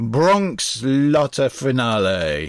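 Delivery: put-on Italian accent. Naming the 1983 pick, an italian film, say the title in an italian accent. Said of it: "that did obviously sound Italian".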